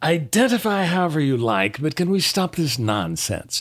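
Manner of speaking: put-on stuffy, old-fashioned, fuddy-duddy parliamentarian voice. Quoting a member of parliament who objected: James Mason voice. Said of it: "a really good James Mason impression".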